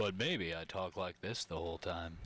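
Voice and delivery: deep broadcast announcer voice. Speaking on the podcast, in an announcer voice. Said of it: "In your announcer voice".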